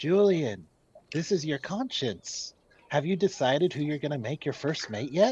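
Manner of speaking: fast, rushed stage whisper. [name] half-whispers to Julian, posing as his conscience: half-whispering.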